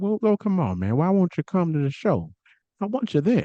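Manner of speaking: friendly coaxing, high, swooping and sing-song. Retelling how Terry Funk pleaded with a wrestler: imitating Terry Funk's soft-spoken voice. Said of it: "this soft-spoken voice".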